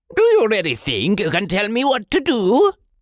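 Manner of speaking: very high, swooping screech.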